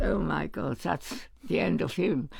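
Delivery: ordinary talk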